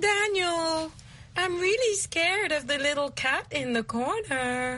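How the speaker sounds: high, unconvincing fake fear, not meant.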